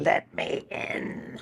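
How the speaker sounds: monstrous, hushed, breathy demon whisper. An actor demonstrates the voice that got them cast, demon voice. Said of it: "I got cast on my demon voice".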